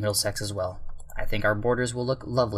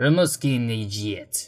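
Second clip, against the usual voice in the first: bad, fake, put-on Russian accent; 4 dB louder than usual. Naming a place while planning borders on a map; bad russian accent. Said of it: "I decided to put a bad Russian accent on the end".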